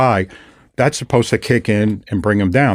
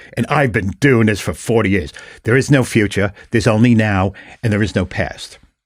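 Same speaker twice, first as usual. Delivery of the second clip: put-on broad, laid-on, thick Australian accent. Retelling a Buddhist man's remarks in a conversation, thick Australian accent. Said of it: "he had a really thick Australian accent".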